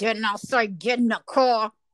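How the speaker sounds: speaking through clenched teeth. Retelling what you said to him, speaking through clenched teeth. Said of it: "speak to him through my teeth".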